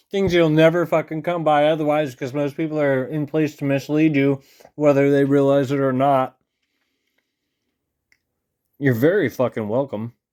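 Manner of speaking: speaking while chewing. Speaker addresses viewers while eating potatoes, talking while eating. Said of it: "I'm eating some potatoes".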